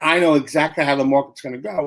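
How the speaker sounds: usual speaking voice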